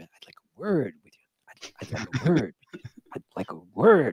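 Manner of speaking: low whisper. Retelling walking toward the ops room rehearsing a line, whispering to oneself. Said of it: "I'm whispering to myself".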